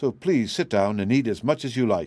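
plain reading voice

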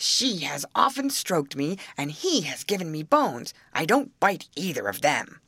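ordinary delivery, nothing marked

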